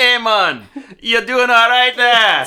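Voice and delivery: high, loud, shrill put-on Scottish Jamaican mash-up accent. Voicing a guard who drags his friend from the infected: put-on scottish jamaican accent. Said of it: "Scottish Jamaican".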